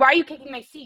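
loud, shrill, accusing yell. Retelling how a woman on a plane turned around: imitating a woman yelling. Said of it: "she starts yelling at me".

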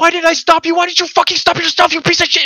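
put-on raging outburst. Retelling a scene where Frenchie turns on Lamplighter, retelling a furious rant. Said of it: "Just going crazy".

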